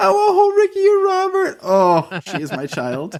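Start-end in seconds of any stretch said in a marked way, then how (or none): 0.0-1.6 put-on tiny, very high little child's voice. Parent quoting the child's repeated line, in a little child's voice. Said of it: "she says in a little voice".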